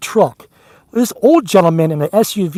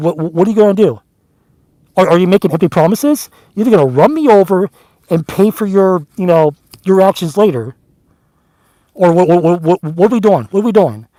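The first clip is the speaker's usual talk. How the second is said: normal talking voice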